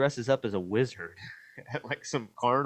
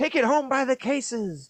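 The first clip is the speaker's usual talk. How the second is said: high, loud, put-on old-timey huckster voice; 6 dB louder than usual. Retelling a movie villain selling slime to kids: imitating a Wild West tincture salesman. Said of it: "talking in rhymes like an old, uh, tincture salesman in the Wild West".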